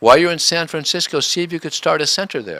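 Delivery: offhand, casual delivery in a high voice.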